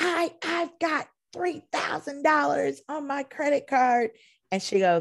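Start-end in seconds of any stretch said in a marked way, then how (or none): 0.0-4.1 mock angry yelling, much higher. Retelling how a guest yelled at a front desk worker over his card: retelling a guest's yell. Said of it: "the guy was yelling and he's like".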